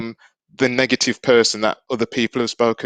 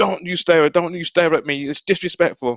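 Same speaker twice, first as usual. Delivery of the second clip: sharp, pitched-up scolding, acted out; 6 semitones higher than usual. Showing how a parent tells a child not to stare: imitating a scolding parent. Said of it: "as a parent, we go".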